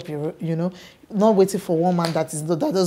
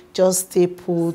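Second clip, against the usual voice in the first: plain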